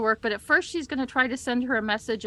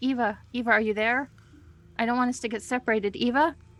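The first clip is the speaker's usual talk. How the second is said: quiet, soft whisper. Calling for a missing companion in the dark: quiet whisper. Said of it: "whisper out loud but not make too much noise".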